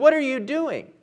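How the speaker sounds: hard, angry man's voice, pitch rising. Telling a story, a hardened man reacts to a lady lifting him up: angry. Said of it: "he said angrily".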